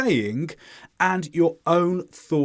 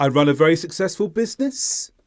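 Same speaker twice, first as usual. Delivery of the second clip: pitch rising toward and on business. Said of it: "the intonation rises towards the end, like this".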